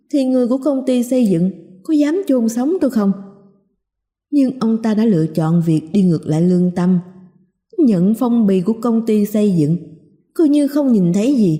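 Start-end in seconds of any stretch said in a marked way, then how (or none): none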